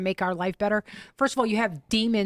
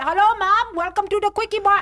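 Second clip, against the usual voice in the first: very high, loud put-on Indian accent; 13 semitones higher, 7 dB louder than usual. Retelling what a call-center worker says on the phone: imitating an indian phone accent. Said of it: "I press one for English and I get".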